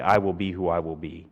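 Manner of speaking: normal talking voice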